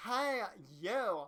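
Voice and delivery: put-on Cali girl voice. Voicing a character whose identity is unknown, the narrator gives them a Cali girl voice. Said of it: "Cali girl voice".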